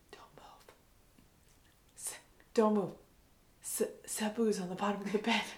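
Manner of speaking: terrified, stammering, breathy scared whisper. Retelling a frightened warning at night: imitating someone whispering. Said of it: "him whispering in my ear".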